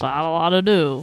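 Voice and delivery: put-on voice with a Canadian-sounding accent. Imitate the person you are talking with to their face, making them sound canadian. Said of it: "you made me sound like Canadian there".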